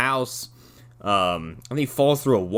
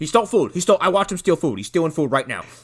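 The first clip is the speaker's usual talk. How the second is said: complaining, aggrieved customer voice; 3 semitones higher than usual. Imagining a customer walking in to report someone in the drive-thru: complaining customer. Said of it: "I'm imagining someone walking in going like".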